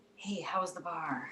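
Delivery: hushed whisper. Greeting someone who walks into the kitchen at night, whispering. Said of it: "Why are you whispering?".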